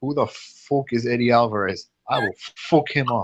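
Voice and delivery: delivered in a put-on Irish accent. Quoting a fighter's pre-fight talk about his opponent: Conor McGregor Irish accent. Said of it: "I have to do it with the Irish accent".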